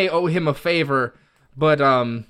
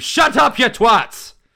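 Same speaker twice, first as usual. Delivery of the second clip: full-throated, loud, shrill screaming; 9 semitones higher, 6 dB louder than usual. Using vicious mockery on the children in character: screaming insult. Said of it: "I'm gonna scream".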